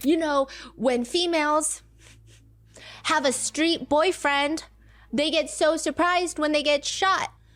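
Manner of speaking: mock worked-up rant. Retelling what a man said in a posted video: imitating a man ranting. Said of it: "He's, like, ranting".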